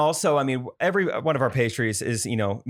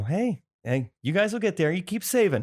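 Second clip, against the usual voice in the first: mock-sarcastic tone, higher pitch; 6 semitones higher than usual. Retelling what he said after hearing there was no microwave, retelling a sarcastic remark. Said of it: "But I did that kind of sarcastic".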